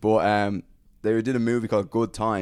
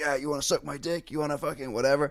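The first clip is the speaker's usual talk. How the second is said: put-on shouting, pitched up; 6 semitones higher, 3 dB quieter than usual. Retelling how an improvising actor shouted at a girl on set: imitating someone shouting. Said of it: "just started shouting at the girl".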